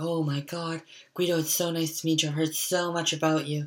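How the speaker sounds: thrilled, flamboyant gushing, high and excited. Retelling a man meeting the speaker's grandfather for the first time, imitating Paul's excited gushing. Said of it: "he was super flamboyant and he was so excited".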